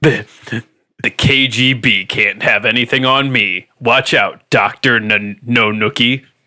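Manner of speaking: macho, swaggering action-hero voice. Asked by another speaker to do it, delivering a line as Duke Nukem. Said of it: "do the Duke, Duke Nukem voice".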